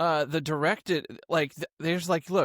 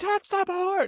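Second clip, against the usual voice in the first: frantic scream, pitched higher. Retelling a movie blooper of running down a hallway: imitating Tom Cruise screaming. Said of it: "he's screaming down the hallway".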